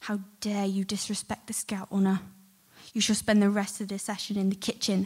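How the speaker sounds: furious, hissed, angry scolding tone. Speaker retelling how a woman leaned in front of them at Cubs: retelling her hiss. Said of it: "she hissed".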